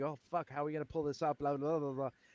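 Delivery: frazzled, panicky babble, rattled off fast. Retelling how someone looked before a show: imitating a frazzled person. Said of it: "you looked frazzled".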